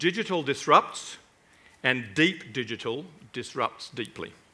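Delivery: slow, deliberate, carefully spaced-out phrasing. Stating a tongue-twister proposition to an audience: said slowly. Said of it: "I have to say it slowly".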